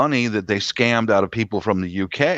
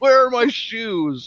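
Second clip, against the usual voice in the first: put-on very high, fussing little old lady voice; 12 semitones higher than usual. Acting out the bit that gave the speaker the idea, in a little old lady voice. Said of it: "acts like a little old lady".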